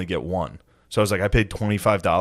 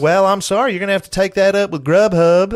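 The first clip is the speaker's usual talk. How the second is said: put-on very high, very loud southern accent; 12 semitones higher, 8 dB louder than usual. Retelling a man's reply to his complaint, in a put-on southern accent. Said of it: "do his southern accent".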